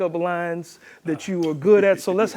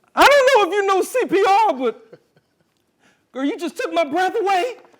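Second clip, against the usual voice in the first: very high, anxious, panicked reading; 13 semitones higher, 3 dB louder than usual. Reading a scripted line to camera three, panicky delivery. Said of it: "that was my panicky. I read it in a panicky mode".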